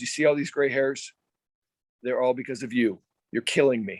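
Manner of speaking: mock dead serious, straight-faced, no hint of joking. Retelling what the manager said after coming out: straight-faced Frank Robinson imitation. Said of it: "he said it with a straight face".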